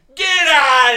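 very loud, very high, shrill, happy shrieking scream. Retelling his brother's reaction to a football injury, retelling his brother's scream. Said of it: "My brother is screaming".

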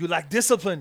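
put-on very loud, rough, half-hearted Austrian accent. Answering a question about temptation: Arnold Schwarzenegger impression. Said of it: "It's a half-assed impression".

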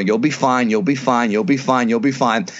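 ordinary talk, nothing marked

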